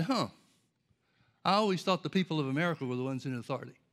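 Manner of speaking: dry, mocking tone with a little sarcasm. Retelling how the Lord answered a prayer: imitating a sarcastic reply. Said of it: "answered me with a little bit of sarcasm".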